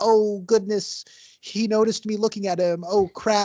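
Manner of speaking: high-pitched, slow, drawn-out musing aloud. Retelling a movie scene where she is caught looking: Carrie Bradshaw voice. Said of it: ""Oh, no, he saw me" voice".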